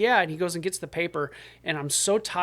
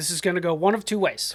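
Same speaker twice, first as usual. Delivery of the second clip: crisp, put-on voice. Retelling what someone said after sitting down next to the speaker: imitating Yeagley's crisp manner. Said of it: "It's a good impression so far".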